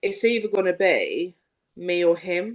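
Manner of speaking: normal talking voice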